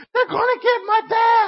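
put-on very high, shrill screaming little kid voice. Telling a story about the two-year-old nephew panicking: imitating a screaming toddler. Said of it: "he's screaming".

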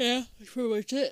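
speaking through a yawn. Wrapping up the talk about the acting, mid-yawn. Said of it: "Caught mid-yawn".

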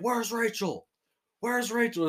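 high-pitched, screamed delivery. Joking about who sounds like Batman, imitating Batman screaming. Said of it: "Remember when he's screaming and he's like".

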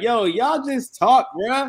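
high, loud, slow, belted exasperated plea.

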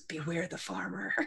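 soft, barely audible, leaning-in half-whisper. A character leans in close to deliver a warning; half-whispering. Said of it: "Zora leans in and just whispers".

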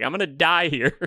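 play-acted high, frantic, freaked-out panicked outburst. Retelling a movie scene where Tim is in the car: imitating Tim freaking out. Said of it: "he's, like, freaking out".

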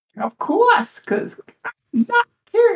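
very high, slow, squeaky feigned innocent voice. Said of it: "give me a deception check".

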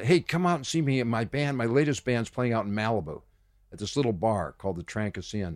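usual speaking voice

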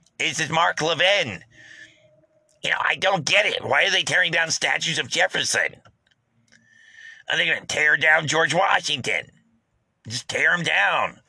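high, squeaky voice. Act out what you heard when listening to Mark Levin last night, in a squeaky Mark Levin voice. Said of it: "his little squeaky voice".

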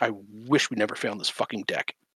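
muttered under the breath. Retelling what one guy said out of character: imitating a mutter under the breath. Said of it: "He just muttered under his breath".

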